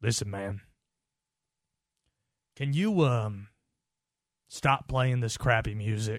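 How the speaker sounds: biggest imaginable thick, heavy country drawl. Retelling a morning phone call from a caller, in a thick country drawl. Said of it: "he has the biggest country drawl you can think of".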